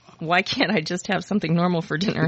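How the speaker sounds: usual speaking voice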